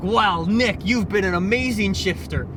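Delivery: ordinary talk, nothing marked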